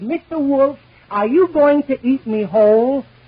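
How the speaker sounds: high, small rabbit character voice. Telling a joke, the rabbit asks the big bad wolf; little rabbit voice. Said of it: "Imitation of a little rabbit".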